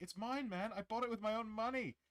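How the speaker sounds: high-pitched, shrill, goofy cartoon seagull voice. Retelling a funny bird video voiceover of a fleeing seagull: voicing a seagull in a stupid voiceover. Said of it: "the seagull running with the French fry is like".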